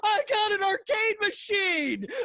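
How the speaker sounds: put-on childlike, very high, loud shrieking squeal. Retelling a man running through a parking lot with his purchase; retelling a scream.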